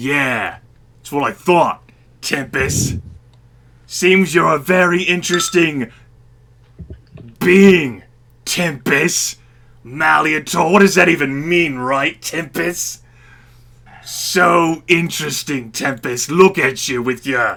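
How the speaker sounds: most obnoxious, grating put-on dwarf voice. A storyteller voices an inebriated dwarf speaking to Tempus, in the most obnoxious voice. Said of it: "perhaps the most obnoxious voice".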